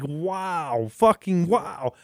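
stunned, awestruck amazement, drawn out. Retelling how the Muggle guy reacts in the movie: imitating someone's amazement. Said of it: "his absolute, like, amazement".

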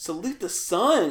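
called out loudly with "sun" stretched. Imitating the game trainer just mentioned: male Wii Fit Trainer voice. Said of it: "he does the voice of the male Wii Fit Trainer".

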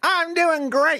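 very high-pitched put-on character voice. Answering the host's greeting: his D&D voice. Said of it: "That was my D and D voice".

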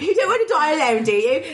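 put-on British accent slipping in. Retelling what someone told another person, in a British accent. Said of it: "Why am I doing a British accent?".

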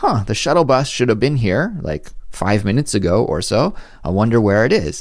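usual speaking voice

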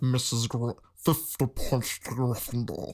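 put-on voice from back of the throat. Quoting Snape lines from the movies: Snape voice talking back in throat. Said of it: "talks, like, way back in his throat".

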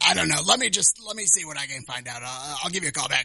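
put-on opinionated old man voice. Prank calling a store about squirrels, imitating an old opinionated man. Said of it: "I wanna call and do that exact voice".

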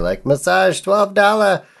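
terrible, fake Louisiana accent, very high pitched. Speaker recalling cheap massage parlors calling people in, bad Louisiana accent. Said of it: "I did that poorly".

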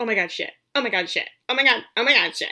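re-enacted, repeated muttering. Retelling what he muttered over and over while she unpacked: muttering. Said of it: "just mutters".

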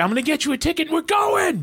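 put-on bubbly enthusiastic voice, very high, eager, rising. Retelling what a friend said when he bought the ticket, imitating an enthusiastic friend. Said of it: "that's literally how he sounded".

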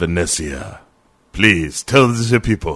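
bad put-on Spanish accent sliding into German. Playing a scene with Vanessa, in a put-on Spanish-turning-German accent. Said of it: "it started as a bit Spanish and then went German".

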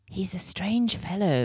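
whispered aside. Narrator reads a character whispering to another as a man walks away: whispering. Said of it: "Ren whispered to Libby".

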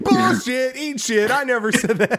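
high, mock bickering like a fake spat. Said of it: "your quarrels on here with each other".

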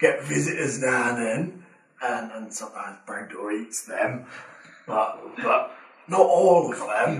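acted-out London Cockney accent. Voicing a character in the game who greets the players: Cockney accent. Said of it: "Why is he Cockney?".

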